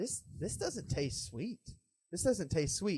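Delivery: soft, slow, musing inner-thought voice. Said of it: "but I thought in my mind".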